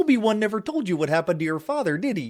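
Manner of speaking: put-on cartoon frog puppet voice. Naming who would voice Darth Vader, reading his line: Kermit the Frog voice. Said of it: "Kermit the Frog".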